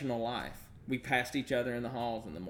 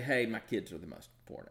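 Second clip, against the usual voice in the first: ordinary delivery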